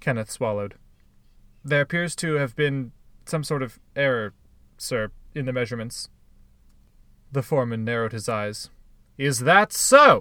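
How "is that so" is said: very loud, booming, roaring bellow. The foreman answers the worker who reports an error, bellowing. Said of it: "He bellowed".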